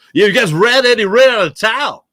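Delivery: loud, high, needling, accusing sports-radio host voice. Mocking radio hosts outside philadelphia, doing an impression of outside radio hosts. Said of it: "My impression of every other radio host".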